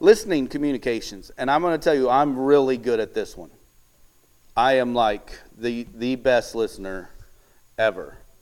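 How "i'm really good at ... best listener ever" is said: slow, dry, tongue-in-cheek mock boast. Speaker tells an audience, some not there in person: sarcastic. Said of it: "sarcasm for those of you who can't see in person".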